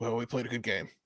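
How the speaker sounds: very quiet, soft, bland delivery without fuss. Imitating a coach's bland postgame remarks: imitating Marvin Lewis. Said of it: "Marvin Lewis".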